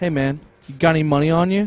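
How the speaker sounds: acted, mean, threatening mugger-style street voice. Retelling a stranger asking for money: imitating a mean, menacing guy. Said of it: "very kind of almost messed up ... mean".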